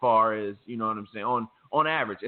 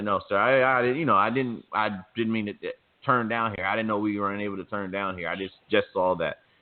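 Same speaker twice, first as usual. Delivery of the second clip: ordinary delivery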